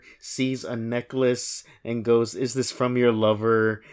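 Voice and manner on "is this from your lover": ordinary talk, nothing marked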